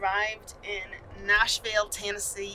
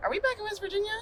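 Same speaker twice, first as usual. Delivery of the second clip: high, mock confused tone. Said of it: "I thought you were like".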